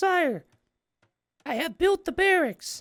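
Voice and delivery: very high, clumsy, badly done woman's voice. Voicing a game worker reporting to her leader, in a bad female voice. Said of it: "I can't really do a good female voice".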